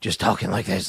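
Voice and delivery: low, rough, rasping put-on throat voice.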